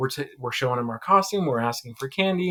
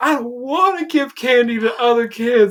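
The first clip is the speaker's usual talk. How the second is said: mock bawling child voice, higher and louder; 10 semitones higher, 8 dB louder than usual. Retelling a child refusing to share candy: imitating a bawling child. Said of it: "And he just starts bawling".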